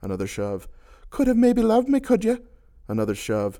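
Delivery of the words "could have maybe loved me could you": very high, shrill, loud shout. Reading a story, a woman answers a man's question: shouting. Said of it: "she shouted".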